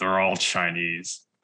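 put-on muttered aside under breath. Telling a story, the speaker quotes a grandpa muttering under his breath. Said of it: "under his breath, he mutters".

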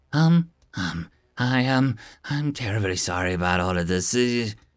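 low, flat, level monotone voice. Reading a story aloud, a floating bubble apologizes: monotone voice. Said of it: "a monotone voice seems to say".

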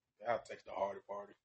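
said all low. Answering who you pick in a match: said all low. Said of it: "I like how you said that all low".

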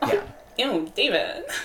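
put-on spoiled socialite voice. Joking with another speaker about Schitt's Creek: Alexis voice. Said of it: "you sounded like Alexis".

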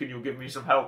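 put-on spy voice with Scottish accent. Retelling a James Bond confessional scene: Sean Connery impression. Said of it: "doing my Connery impression".

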